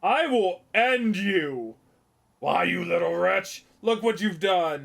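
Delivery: slow, angry, harsh scolding tone. Scolding a child who spilled a drink: raising voice at a child. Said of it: "why are you raising your voice at a child?".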